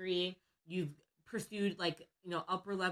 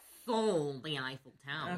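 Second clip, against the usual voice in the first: campy villain voice, lower pitched; 4 semitones lower than usual. Speaker tells a story about a con, doing a Dr. Evil voice. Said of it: "going to sound like Dr. Evil".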